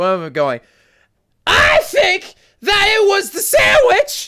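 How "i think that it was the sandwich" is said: shrill, very high, drawn-out screaming. Voicing a person screaming down the street: screaming in character. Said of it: "you hear three people screaming".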